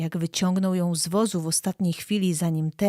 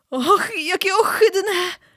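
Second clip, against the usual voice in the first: very high, loud, anxious groaning moan; 13 semitones higher, 6 dB louder than usual. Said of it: "Jęknęła, nerwowo wycierając się".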